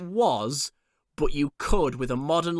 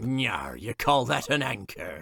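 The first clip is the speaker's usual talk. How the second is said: sea captain character voice, full character; 2 semitones lower than usual. Describing a Conan episode scene, quoting the captain, Captain McAllister voice. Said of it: "It is just Captain McAllister going".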